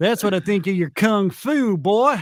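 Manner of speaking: put-on American Southern accent. Acting out a taunt in an imagined fight scene: Southern accent. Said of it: "that's where the Southern accent comes in".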